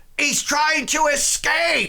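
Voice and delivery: rough, gruff yell, pitched very high. Narrating the scene, the speaker voices a character who shouts in a gruff voice. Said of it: "he shouts out in a a, a gruff voice".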